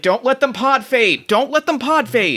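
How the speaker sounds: play-acted high-pitched screaming through a covered mouth. Voicing a figure whose mouth is covered as it is dragged off: screaming with covered mouth. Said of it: "they just start screaming".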